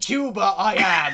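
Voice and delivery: very loud, booming, high, put-on pirate accent. Friends trading accent jokes, speaker answers in pirate voice. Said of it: "don't speak like pirates".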